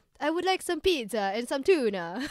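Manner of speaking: put-on, fake Italian accent. Joking about voicing a pet cat as italian, in an italian accent. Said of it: "like Vader being Italian".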